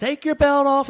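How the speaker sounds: imitated man yelling. Retelling a guy yelling orders at people going through a scanner: retelling a screamed order. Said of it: "this guy is screaming at the top of his lungs".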